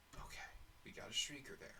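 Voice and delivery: hushed whisper. Speaker spotting a shrieker, whispering. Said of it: "I don't know why I'm whispering".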